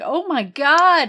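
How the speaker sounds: high, very loud horror-style scream. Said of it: "really iconic scream".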